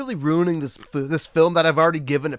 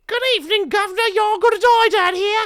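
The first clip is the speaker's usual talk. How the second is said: put-on Cockney accent, much higher pitch.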